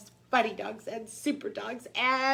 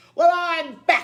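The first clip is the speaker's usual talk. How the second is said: very loud, menacing, growling bark; 6 semitones higher, 8 dB louder than usual. Reading a story as the meanest dog comes back to town, Big Bark's growl. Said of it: "growled Big Bark".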